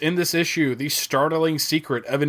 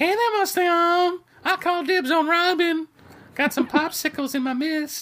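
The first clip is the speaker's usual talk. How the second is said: creepy cartoon voice, much higher pitch. Comparing a comic villain to a Family Guy character, in a Herbert the Pervert voice. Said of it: "he kind of looks like Herbert the Pervert".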